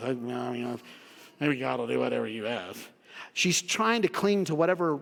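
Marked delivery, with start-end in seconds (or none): 0.0-2.8 acted muttering under the breath. Retelling Martha's words to Jesus from verse twenty-two: imitating muttering under breath. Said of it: "I think she said it under her breath".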